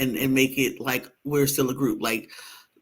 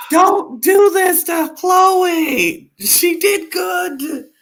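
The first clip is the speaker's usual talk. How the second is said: very high, very slow, drawn-out scream; 7 dB louder than usual. Retelling own reaction while watching a girl compete: retelling own screaming. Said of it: "I was screaming".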